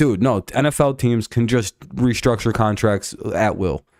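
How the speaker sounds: normal talking voice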